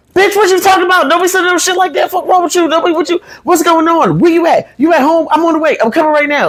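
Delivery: acted, frantic tumbling panic, very high, rattled off. Retelling a sister's reaction to an alarming text: imitating sister freaking out. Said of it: "she freaked out".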